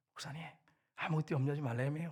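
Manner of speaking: hushed, confiding half-whisper, close and intimate. A pastor acts out a church member half-whispering to him, imitating a half-whisper in the ear. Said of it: "귓속말로 이렇게".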